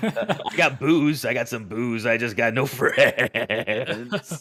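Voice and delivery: very slow, drawn-out, high, creepy voice. Picturing being a creep outside the theater: put-on creep voice. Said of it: "being that creep who's like".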